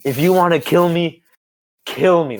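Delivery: female screaming at full lung power. Retelling a fight where a girl screamed at another: imitating someone screaming. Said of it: "She started yelling at her lungs".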